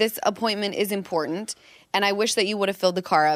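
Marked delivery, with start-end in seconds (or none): none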